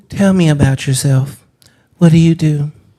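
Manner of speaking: woman's voice. Acting out an online dating chat as the woman: imitating a woman on a date. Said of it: "Why the voice?".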